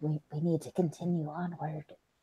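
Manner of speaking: hushed, very soft, quiet half-whisper. Voicing a character to the players: quiet half-whisper. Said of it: "quietly whispering".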